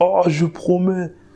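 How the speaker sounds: huge, high-pitched, desperate voice. Retelling a promise made face down on the ground: imitating own big voice. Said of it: "j'avais une grosse voix, je disais".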